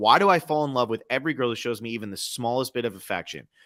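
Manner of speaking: ordinary talk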